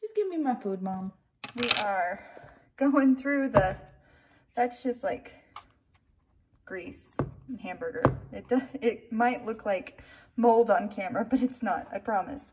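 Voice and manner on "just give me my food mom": soft, begging, pleading dog voice. Talking to the camera while feeding the dog, voicing a begging dog. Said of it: "Is that your voice, buddy?".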